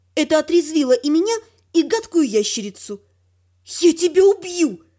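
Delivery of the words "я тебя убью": spiteful, venomous, angry hissing. The first-person narrator turns on the nasty lizard after the girl flees, angry hiss. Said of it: "зло прошипела я".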